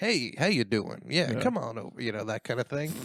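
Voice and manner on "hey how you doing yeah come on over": slow, unhurried, drawn-out radio DJ style voice. Imitating the Spotify DJ's greeting: imitating the Spotify DJ voice.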